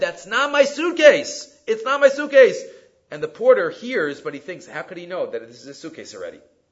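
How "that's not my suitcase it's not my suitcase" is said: high, drawn-out, play-acted far-carrying scream. Telling a story of a man yelling to a distant porter, retelling a man screaming. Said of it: "And he screams out again".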